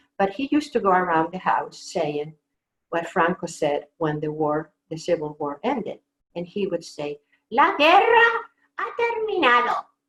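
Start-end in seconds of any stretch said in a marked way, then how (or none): 7.5-9.8 high-pitched, very loud announcing delivery. Imitating your father around the house repeating what Franco said when the Civil War ended, in Franco's high voice. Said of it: "with Franco's high voice".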